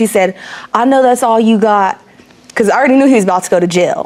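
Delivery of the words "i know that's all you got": ordinary talk, nothing marked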